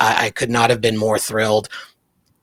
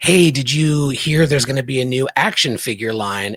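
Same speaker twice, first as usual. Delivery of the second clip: usual speaking voice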